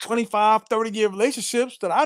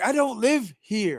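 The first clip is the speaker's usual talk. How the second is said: slow, pleading, almost crying. Retelling pleading with dudes at a party: acting out pleading near tears. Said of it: "I'm like pleading with dudes, almost like I want to cry".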